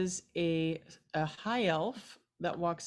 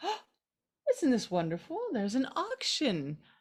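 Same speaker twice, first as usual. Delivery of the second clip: high, swooping aristocratic elf sorceress voice; 7 semitones higher than usual. Voicing a high elf sorceress, an aristocrat, greeting the party: voicing a high elf aristocrat sorceress. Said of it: "she grabs it out of your hands and she goes".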